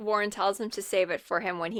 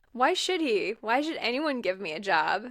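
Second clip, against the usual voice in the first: usual speaking voice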